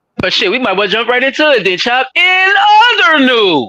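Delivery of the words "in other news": very high, shrill, loud screaming. Introducing the next topic to another speaker: screaming. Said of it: "Sorry for screaming".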